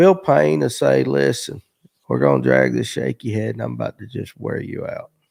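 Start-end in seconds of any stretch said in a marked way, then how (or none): 1.0-5.0 put-on slow, aged old man voice. Retelling how Bill Payne explains his fishing: imitating Bill Payne's old slow voice. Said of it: "he's got that old slow voice now".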